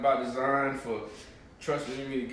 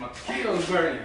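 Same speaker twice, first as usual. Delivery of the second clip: usual speaking voice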